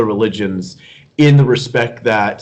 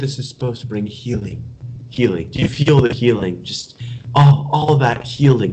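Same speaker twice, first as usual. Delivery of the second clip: taking on a woman's voice. Retelling a sermon where she tells the audience to feel healing: imitating Marianne Williamson. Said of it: "And she said".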